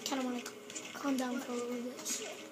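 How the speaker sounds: talking very quietly. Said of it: "I'm actually talking really quiet".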